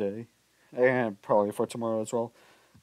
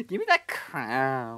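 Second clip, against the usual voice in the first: put-on slow emo kid drawl, "crown" stretched. Mocking another player by imitating how he talks: imitating an emo kid's way of talking. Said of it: "you could just tell by his accent".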